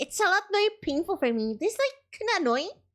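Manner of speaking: voice pushed very high, sounding pained. Explaining how speaking higher feels for you, higher voice. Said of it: "If I go higher".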